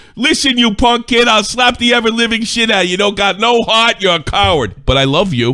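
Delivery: put-on furious, loud, very high Italian American accent, ranting. Imitating a clip's angry rant, mock Italian American fury. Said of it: "it sounds like an Italian fury".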